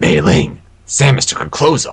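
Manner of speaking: attempt at a raspy voice. Second speaker trying the same character line, raspy character impression. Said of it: "You have to have that really specific raspy voice".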